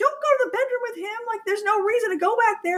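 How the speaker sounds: very high, urgent shouting. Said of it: "yelling at her, the T V".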